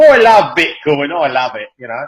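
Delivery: put-on English accent, chatty and rambling. Joking about bitcoin cereal, the speaker mimics someone at breakfast in a put-on english accent. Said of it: "that's the English accent".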